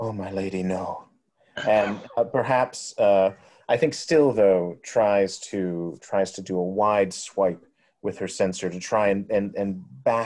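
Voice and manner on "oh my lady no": fearful muttering. Voicing a character who turns back to face skeletons: muttering in fear. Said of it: "she mutters".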